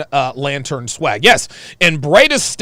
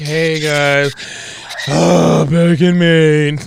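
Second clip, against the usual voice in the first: put-on depressed-sounding voice. A host mimics a guest who is back in maine, imitating him sounding depressed. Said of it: "Do you see how depressed he sounds".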